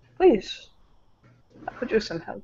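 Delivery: hushed, breathed, put-on European accent. Speaker imitating a man gesturing at his plate of nachos, european accent. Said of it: "a fucking Euro accent comes out of his mouth".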